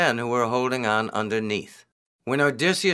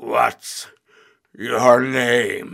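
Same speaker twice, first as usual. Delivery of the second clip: growled, with name stretched; 4 dB louder than usual. Narrator voicing the Cyclops asking Odysseus his name, growling Cyclops voice. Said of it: "He growled".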